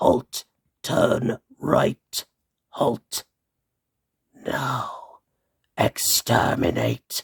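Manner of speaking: very slow, drawn-out, each word spelled out. Describing the Dalek scene a set is based on, Davros impression. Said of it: "that's my Davros impression right there".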